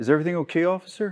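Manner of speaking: mock sudden polite calm, mild, courteous, lifted. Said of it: "mood shifts to screaming, to crying".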